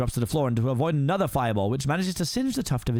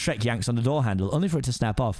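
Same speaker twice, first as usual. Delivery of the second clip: usual speaking voice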